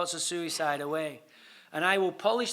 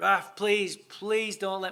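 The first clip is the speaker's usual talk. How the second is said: put-on tearful, pleading voice. Retelling going to the press room and begging not to be banned, retelling crying and pleading. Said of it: "I'm crying".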